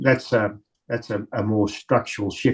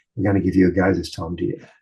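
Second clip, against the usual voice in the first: imitated whisper; 2 semitones lower than usual. Retelling what older women at the booth whispered: retelling a whisper. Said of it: "they'd whisper and they'd say".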